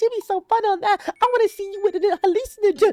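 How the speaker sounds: very high, loud mocking voice.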